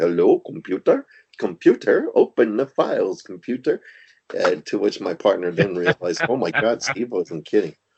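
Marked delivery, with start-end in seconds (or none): 0.0-3.8 high, sing-song voice swooping upward. At the office, speaker talks to the computer mouse in a Scotty impression. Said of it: "doing my best Scotty impression".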